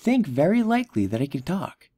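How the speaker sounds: ordinary delivery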